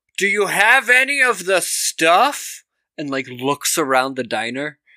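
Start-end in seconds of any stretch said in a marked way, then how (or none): 0.2-2.6 loud, slow, raised, announcing voice. Retelling what a man named Mo said in a diner, retelling a loud remark. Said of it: "says really loudly".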